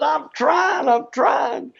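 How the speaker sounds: frantic, high-pitched, strained insisting.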